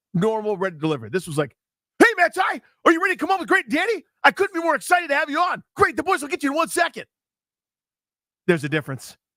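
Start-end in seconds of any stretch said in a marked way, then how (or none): 2.0-7.0 very high, bouncy, overeager, giddy gushing. Retelling how Ryan brought a guest on the show, imitating Ryan's giddy excitement. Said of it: "he's like popping up and down in his chair".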